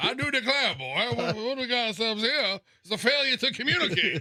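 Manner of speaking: put-on cartoon Texas accent. Showing how Texas talk sounds: Foghorn Leghorn voice. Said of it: "Foghorn Leghorn".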